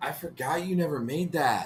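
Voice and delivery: hushed, soft, secretive half-whisper with no voice. Chatting with friends about a forgotten video, speaking in a half-whisper. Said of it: "Why are you whispering".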